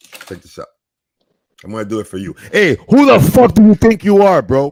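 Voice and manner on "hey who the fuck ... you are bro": very loud, pitched-up put-on fury. Showing another speaker a fake outburst on mic: acting pissed off. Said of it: "when I was acting pissed off".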